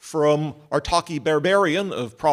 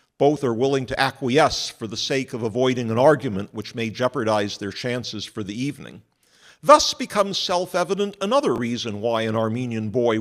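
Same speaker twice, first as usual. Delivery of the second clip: normal talking voice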